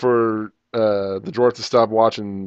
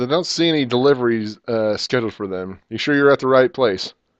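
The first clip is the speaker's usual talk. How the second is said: ordinary talk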